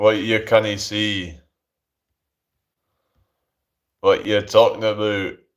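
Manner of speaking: put-on Scottish accent. Reading chat and answering in a put-on voice: Scottish accent. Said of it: "I'm just talking like a Scottish person now".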